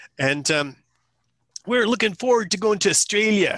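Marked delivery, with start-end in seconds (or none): 1.7-3.6 put-on very high, loud, clumsy Midwest American accent. Retelling how a Midwest couple greeted the speaker: imitating a Midwest couple's accent. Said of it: "I can't do the accent".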